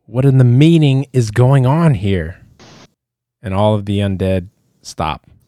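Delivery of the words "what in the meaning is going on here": loud, high cry, crying out. Narrating an elf emerging from a tent, voicing the elf crying out. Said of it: "an elf and cries out".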